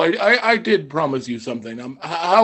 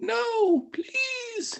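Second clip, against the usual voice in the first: tiny, very high, squeaky mouse voice; 9 dB quieter than usual. A game master voices a mouse carried by its tail to him: little mouse voice. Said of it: "you guys can hear the little mouse".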